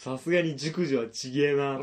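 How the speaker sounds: play-acted brash, unfiltered, careless blurting. Retelling crude remarks someone made out loud: imitating someone saying it loudly. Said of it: "でっかい声で言ってるんですよ".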